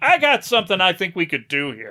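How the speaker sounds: bad, animated sing-song voice swooping up and down. Retelling a film director's idea: bad Irvin Kershner impression. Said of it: "my very, very bad Irvin Kershner impression".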